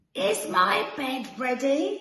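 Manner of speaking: slow, drawn-out, high-pitched growling giant voice. Narrator reading a story, voicing the giant's question, growling giant voice. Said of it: "the giant would growl".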